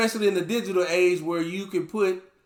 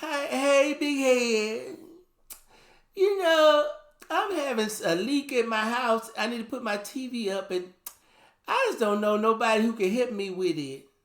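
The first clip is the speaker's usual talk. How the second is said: put-on sugary sweet pleading voice, drawn out; 4 semitones higher than usual. Mocking someone who only calls when they need something; imitating a sweet voice. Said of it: "here you come with the sweet voice".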